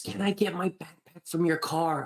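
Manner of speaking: secretive, high, hushed half-whisper. Retelling how she asked to get her backpack: imitating someone half-whispering. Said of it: "She she's whispering".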